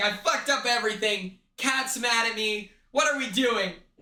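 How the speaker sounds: mock crushed, sorry, distraught, defeated tone. Speaker retells a scene from a vlog, acting out a distraught man. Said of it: "He's distraught".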